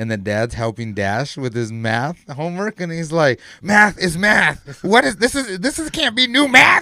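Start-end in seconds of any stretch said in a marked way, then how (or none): 3.6-6.8 fed-up dad voice losing it, very high, raised. Retelling a movie scene where the dad helps with math homework: imitating the angry dad from The Incredibles 2. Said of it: "so pissed, hitting his book".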